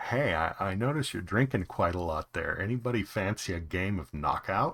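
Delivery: friendly, amiable, easygoing voice. Narrating a rough-looking stranger who walks up to the table and speaks, friendly. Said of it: "his demeanor is friendly".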